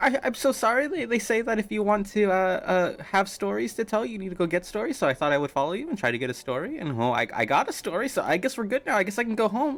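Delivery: put-on sheepish, flustered, nervous, stammering, kid-like voice. Voicing a kid caught following the party after being scolded: nervous reprimanded kid. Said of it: "I feel very reprimanded".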